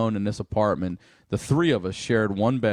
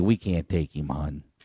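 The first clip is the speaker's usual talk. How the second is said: put-on low, kindly, sorry-sounding, apologetic Baltimore accent; 6 semitones lower than usual. Retelling how the coroner's staff answered after the death, in a Baltimore accent. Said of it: "But they got that Baltimore accent".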